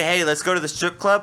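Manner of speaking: plain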